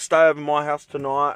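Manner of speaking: normal talking voice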